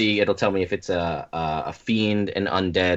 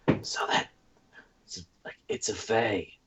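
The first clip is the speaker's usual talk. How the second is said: hushed whisper out the side of the mouth; 8 dB quieter than usual. Whispering to Zephyr out the side of the mouth: in-character whisper. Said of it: "whisper, like, out the side of my mouth".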